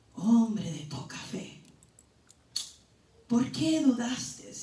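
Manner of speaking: very quiet, low, hushed, gentle tender voice. Imagining what Jesus said to the man who doubted, imitating Jesus's tender voice. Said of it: "Usó una voz así como él es".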